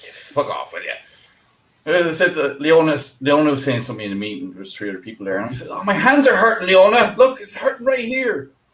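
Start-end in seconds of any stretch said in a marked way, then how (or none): 0.0-0.9 whispered, hushed, breathy Irish accent. Showing the others a put-on irish accent, irish accent. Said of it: "The Irish accent".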